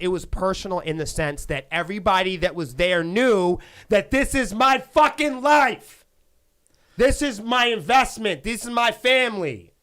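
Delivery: yelling with passion. Explaining why an event mattered personally: yelling with passion. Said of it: "I gotta stop yelling like that".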